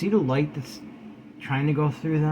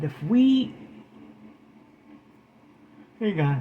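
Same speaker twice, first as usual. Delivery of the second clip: speaking through a yawn. Speaker addressing the audience breaks off mid-sentence: yawning. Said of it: "I'm sorry, I'm yawning".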